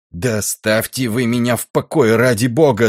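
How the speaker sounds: loud, shouted, yelled voice, ringing out. A narrator reads a stoker answering an officer's questioning, shouted. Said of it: "закричал кочегар".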